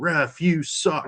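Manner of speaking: mock stadium crowd scream. Recalling a terrible ref call, the speaker acts out the stadium: retelling crowd screaming. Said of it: "the whole stadium's just screaming".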